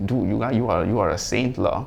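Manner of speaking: ordinary talk, nothing marked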